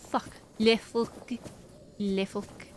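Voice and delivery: slow, drawn-out, put-on French accent. Speaker repeating a swear word for viewers, in a mock French accent. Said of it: "How do you say that in with a French accent?".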